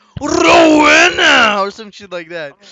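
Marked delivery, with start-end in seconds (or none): 0.2-1.6 very loud, high wrestling-announcer voice. Showing the announcer voice expected for the guest's introduction: announcer voice. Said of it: "the announcer voice".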